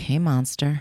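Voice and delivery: mock whispering. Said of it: "whisper, like".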